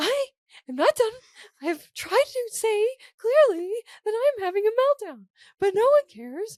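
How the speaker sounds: very high, loud, squeaky little voice. Retelling what she said to her roommate during a meltdown, very high-pitched tone. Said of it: "speaking in this very high pitched tone".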